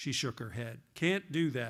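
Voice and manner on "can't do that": heavy, thick, drawn-out Southern drawl. Reading aloud, voicing her refusal at an airport bar: thick southern drawl. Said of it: "she said in a southern drawl that had gotten thicker".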